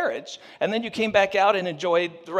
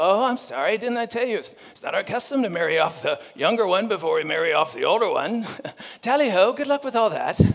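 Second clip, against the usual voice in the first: arrogant, smug, put-on British accent. Retelling a story, the speaker voices Uncle Laban replying to a complaint, smug British accent. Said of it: "I have no idea why Uncle Laban sounds British".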